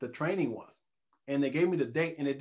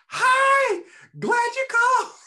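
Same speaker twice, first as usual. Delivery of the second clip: energetic chirp, very high pitch and very loud; 10 dB louder than usual. Speaker recalls a woman's answering-machine greeting, imitating Lisa Kalman's high energy. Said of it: "she's one of these high energy".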